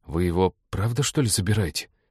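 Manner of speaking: plain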